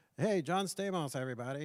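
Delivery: put-on nasal host voice. Retelling a comedy roast and quoting its host, nasal John Stamos impression. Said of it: "he has that kind of nasally voice".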